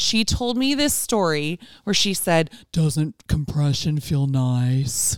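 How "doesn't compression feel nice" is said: low masseuse-like voice, lingering on "nice". Retelling what the masseuse said during a massage: imitating the masseuse's tone of voice. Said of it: "Is that the tone of her voice?".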